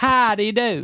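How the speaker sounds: put-on old-time London accent. Answering a request to do a Londoner accent: Londoner accent. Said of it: "Just give us a Londoner".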